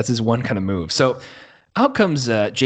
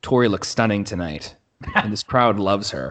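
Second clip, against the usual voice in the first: level, almost deadpan, barely excited delivery. Imitating as accurately as possible how he said it: deadpan Michael Cole impression. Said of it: "He says it like that. Like, it's like almost deadpan".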